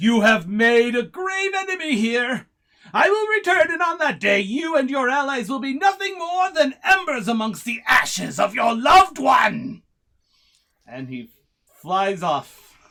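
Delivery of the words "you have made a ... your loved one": very high, loud, shrill yelling. The game master voices a dragon flying away, yelling back. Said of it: "and yells back".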